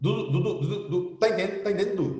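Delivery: words rushed out, very fast speech. Imitating a woman from Rio Tinto who talks very fast, with very fast speech. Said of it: "ela fala assim ... Ela fala muito rápido".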